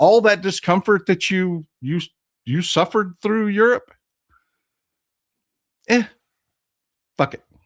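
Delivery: a little annoyed. Speaking to europe about the discomfort it suffered over russia, a little angry. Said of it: "I'm a little bit angry about this".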